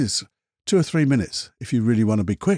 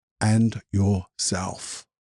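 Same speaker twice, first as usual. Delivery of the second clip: very slow, deliberate, each word weighed; 3 semitones lower than usual. Speaker ending a list of relationships for an audience: very slow, deliberate. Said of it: "Said that very slowly, didn't I? Deliberately".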